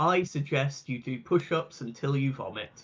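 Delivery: utterly composed, very calm delivery. Role-playing a character who closes the door and turns to him: very calm. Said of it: "very calmly will close the door".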